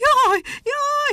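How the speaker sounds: very high, shrieked screaming cry. Reading a story, a monkey cries out and starts to run: screaming. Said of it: "Sikoltotta Muki".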